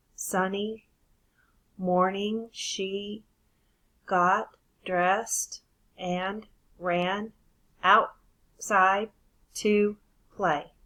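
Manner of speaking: very slow, halting, choppy word-by-word reading. Showing a non-fluent reading of a sentence: choppy, word by word. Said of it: "It was word by word. It was choppy".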